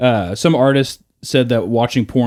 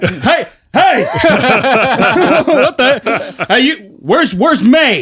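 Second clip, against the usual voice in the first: put-on pissed-off outburst, very high, very slow; 12 semitones higher, 4 dB louder than usual. Retelling how a father reacted to missing comics: imitating an angry father. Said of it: "he'd get all pissed off and be like".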